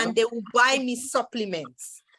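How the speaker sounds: ordinary talk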